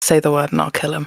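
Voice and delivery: hushed whisper. Voicing a character leaning in to the people around her: whisper. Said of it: "lean in and whisper to the people around her".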